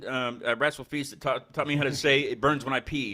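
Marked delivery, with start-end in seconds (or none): none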